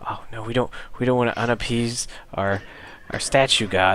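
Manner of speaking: skittish, fretful, jittery nervous kobold voice. A game master voices some kobolds speaking up, jittery kobold voice. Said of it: "kobolds seem a little jittery".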